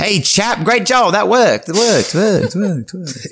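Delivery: very high, ringing, echo-like voice, repeated. Voicing a distant character calling through a tunnel: voice with an echo. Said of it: "like a little bit of an echo".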